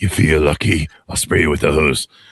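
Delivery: deep, dropped, low tough-guy drawl. Joking about being old, playing that Clint Eastwood character. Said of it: "I'm that Clint Eastwood character now".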